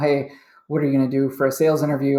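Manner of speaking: ordinary delivery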